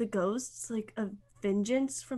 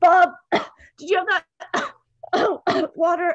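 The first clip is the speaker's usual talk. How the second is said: very loud, high, put-on coughing through words; 7 semitones higher, 14 dB louder than usual. Acting out a character coughing while asking Bob for water. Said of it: "I start coughing".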